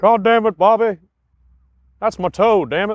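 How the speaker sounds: exasperated cartoon dad voice. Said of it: "We do we do a lot of impressions".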